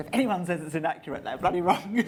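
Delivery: loud, laughing, defiant tone. Talking about making a historical film and its critics, laughing.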